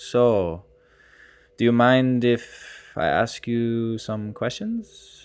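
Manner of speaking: very slow, slow-motion style speech. Telling about the man sitting in his front seat, the speaker quotes him: imitating a man's slow-mo speech. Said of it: "he was very slow mo".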